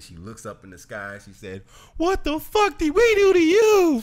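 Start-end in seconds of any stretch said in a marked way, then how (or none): 2.0-4.0 very high, slow, weeping, despairing cry. Retelling a woman whose home was wiped out, looking at the sky, imitating her crying. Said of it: "And she's there crying".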